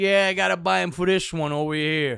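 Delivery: put-on Italian accent. Retelling an old stand-up bit, doing the italian guy voice. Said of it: "I used to do the Italian guy".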